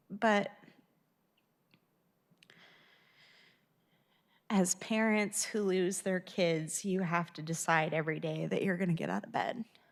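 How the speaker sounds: crying while talking. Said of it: "I'm crying right now".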